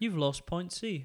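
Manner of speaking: put-on British-accented voice. Mocking a forgettable game voice line, imitating some bloke in an English accent. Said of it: "in an English accent going like".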